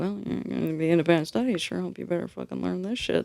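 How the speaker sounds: grumbled aside under the breath. Retelling what mom said when handing over a guitar: imitating mom muttering under breath. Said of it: "She said it under her breath like that".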